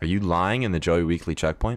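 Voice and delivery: ordinary talk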